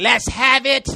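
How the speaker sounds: high leprechaun voice. Mimicking another speaker as a robbed leprechaun: imitating a leprechaun voice. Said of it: "you sound like a leprechaun".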